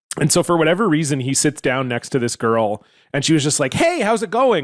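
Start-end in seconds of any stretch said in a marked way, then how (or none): 3.8-4.7 all bright, cheery, high, chipper voice. Retelling a girl greeting a dour guy who sat beside her, imitating a chipper girl. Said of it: "Like all chipper".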